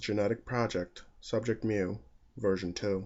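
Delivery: ordinary delivery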